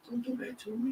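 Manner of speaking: soft, breath-only half-whisper under the breath. Retelling a reply made in court about back pay: imitating a half-whisper under breath. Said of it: "I whispered under my breath".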